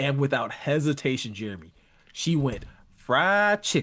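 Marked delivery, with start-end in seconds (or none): 3.0-3.8 twangy Southern drawl, pitched up. Retelling how a wife answered a question about her husband's favorite food: imitating a southern twang. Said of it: "with a Southern twang".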